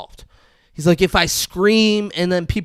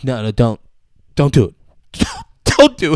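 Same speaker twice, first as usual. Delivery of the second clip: pleading, begging voice with swooping pitch; 3 semitones lower than usual. Retelling a TV scene as a man's pinky is about to break: imitating Jonah pleading. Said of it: "Jonah's like".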